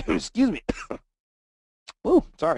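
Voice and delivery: sputtering, coughing, choked speech. Reading out a listener's market question, the speaker breaks off choking on a drink. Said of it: "choking on my drink here".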